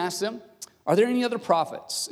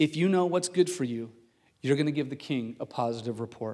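put-on whisper, lower pitch; 6 semitones lower, 3 dB quieter than usual. Retelling a messenger warning a prophet while walking: acting out a whisper. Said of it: "whispers to him as they're walking down".

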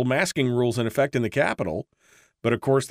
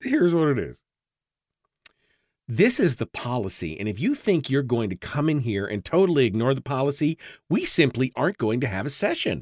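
sarcastic, snide, put-on snarky edge. Quoting her response to lawmakers who chose not to wear masks, mock-snarky tone. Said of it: "I may have added the snarky tone to that".

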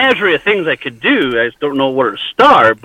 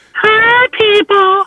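shrill, very high-pitched squeal. Showing the alternative to going with the deep voice, give a high-pitched screech. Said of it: "you got to go with a high-pitched".

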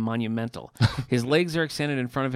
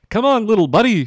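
very loud, pitched-up, bellowed cartoon dad voice; 9 semitones higher, 11 dB louder than usual. Comparing cartoon impressions with another speaker, Doggy Daddy voice. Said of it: "And Doggy Daddy's like".

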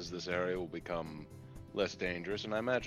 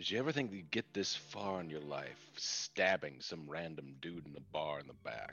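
close hushed whisper, quieter; 3 semitones lower, 6 dB quieter than usual. Playing a character who leans in so no one else hears, whispering close. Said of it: "and I whisper close so that no one else can hear this".

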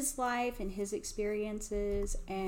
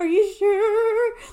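very high, very loud voice cracking near tears; 12 semitones higher, 16 dB louder than usual. Recounting hearing the fitting needs new branches, asking back: retelling a cracking voice. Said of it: "My voice is all cracky".

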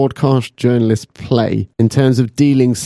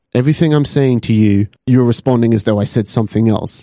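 ordinary talk

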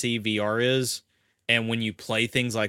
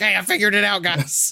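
play-acted, shrill, very high, loud yell; 10 semitones higher, 5 dB louder than usual. Retelling calling out to the guys that he figured it out: retelling a scream. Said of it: "I'm screaming it".

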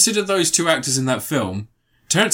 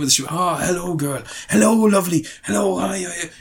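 silly put-on Welsh accent, higher and slower; 3 semitones higher than usual. Mocking an actor's film accent while discussing his charm, bad Robert Downey Jr. Welsh accent. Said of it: "even with the stupid Welsh accent".

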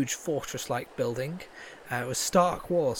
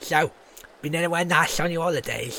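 put-on raised old crow creature voice; 5 dB louder than usual. The game master voices the hooded figure on the gondola greeting the player: old crow's voice. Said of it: "And she says to you".

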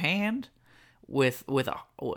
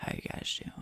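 whispered star voice, all breath; 11 dB quieter than usual. Asked to do a Matthew McConaughey, greeting the others: Matthew McConaughey voice. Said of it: "Matthew McConaughey".

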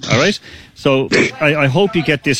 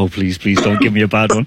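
put-on nervous pleading voice, lower pitch; 4 semitones lower than usual. Acting out another player before asking them a question: imitating Andrew pleading nervously. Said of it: "shaking into me and going".

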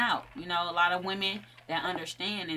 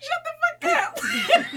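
mock very high, drawn-out, weepy, tearful snap; 8 dB louder than usual. Retelling a partner's joke about starving the baby: retelling crying retort. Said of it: "I'm crying, like".

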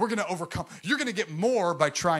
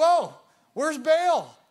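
put-on sarcastic voice, much higher, louder, slower; 10 semitones higher, 6 dB louder than usual. Retelling the story of Elijah and Baal to listeners, sarcastic Elijah impression. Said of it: "And he was really sarcastic".

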